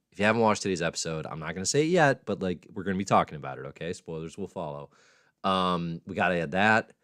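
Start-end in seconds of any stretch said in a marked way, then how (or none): 4.0-4.9 hushed, much softer delivery.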